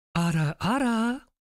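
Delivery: high, affected, put-on feminine voice. Deliberately recreating a cringe moment, in a put-on feminine voice. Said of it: "We'll do it in the Ford voice".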